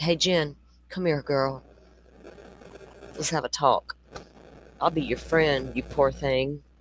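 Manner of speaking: put-on friendly, sympathetic tone. Acting out coaxing someone into a talk: fake sympathetic tone. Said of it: "pretend I have some sympathy".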